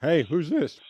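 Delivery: high, loud voice breaking mid-phrase. Answering another call, voice cracking. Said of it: "My voice cracked".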